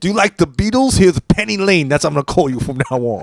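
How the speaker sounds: sinister, coaxing voice with friendliness that sounds evil. Joking about a movie, doing an evil Bill Cosby impression. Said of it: "That's my Bill Cosby".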